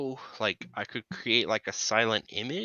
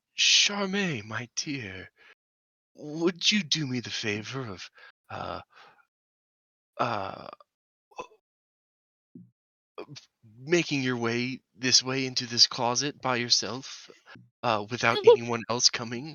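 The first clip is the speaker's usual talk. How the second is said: theatrical stage whisper, clearly worded. Speaking in character to a woman through a door: stage whisper. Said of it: "whisper, like a stage whisper".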